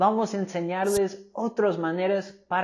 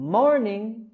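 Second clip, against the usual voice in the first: morning with voice lifted on mor-; 3 semitones higher than usual. Modeling an informal greeting for learners, stress on first syllable of morning. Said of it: "subir la voz y la entonación en la primera sílaba".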